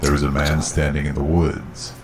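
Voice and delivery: ordinary delivery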